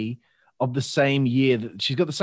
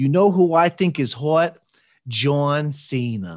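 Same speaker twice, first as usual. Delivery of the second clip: slow, bad New York Italian American accent. Recalling what the listener said, in a bad New York Italian American accent. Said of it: "I apologize for my bad New York Italian American accent here".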